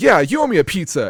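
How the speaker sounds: put-on loud, high childlike voice. Retelling how Cloud says a line in the game: imitating Cloud sounding like a child. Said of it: "like a child".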